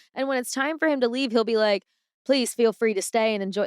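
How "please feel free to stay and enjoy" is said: put-on, attempted Southern accent. Retelling what a man says as he leaves: trying a Southern accent. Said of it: "that's me trying to be Southern".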